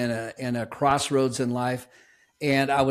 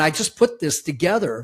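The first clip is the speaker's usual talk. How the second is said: usual speaking voice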